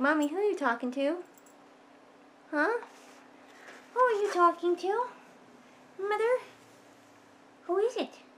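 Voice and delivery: high, cross, miffed house pet voice. Retelling what Abby asked while the speaker was talking to others: voicing the pet Abby. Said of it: "She was like".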